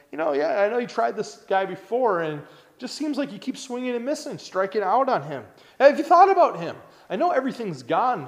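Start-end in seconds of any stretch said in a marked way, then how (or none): 0.1-6.7 mock dry, teasing sarcasm in a slightly pitched-up voice. Explaining a Bible passage, the speaker voices God answering Satan, mock-sarcastic. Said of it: "bit sarcastic back at Satan here from God".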